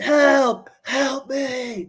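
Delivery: very high, loud, piercing shriek. Retelling how a friend screamed for help on spring break: imitating Fletcher screaming for help. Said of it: "screaming that".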